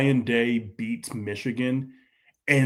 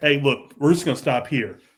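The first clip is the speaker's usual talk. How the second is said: put-on dad voice with Midwestern accent. Imitating the coach telling players they're stopping here: Midwestern dad voice. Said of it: "Like a Midwestern dad".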